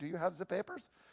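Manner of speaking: poor put-on German accent. Speaker describing the persecution of Christians quotes the persecutors in a bad German accent. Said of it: "That wasn't a very good German accent".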